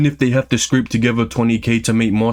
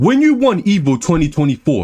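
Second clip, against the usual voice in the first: usual speaking voice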